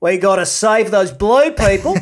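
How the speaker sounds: put-on Australian accent under American accent. Mocking an actor's Aussie accent showing through a bland East Coast accent: Sam Worthington, Aussie accent showing through. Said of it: "you could just hear him being like".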